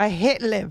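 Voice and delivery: put-on, fairly convincing Northern Irish accent. Talking with others about Rory and Liv, put on a pretty good Northern Irish accent. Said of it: "that was pretty good Northern Irish accent".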